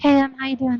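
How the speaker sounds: deliberately put-on whisper. Describing a competitor who now whispers, imitating his greeting: imitating Mo whispering. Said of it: "why he whispers".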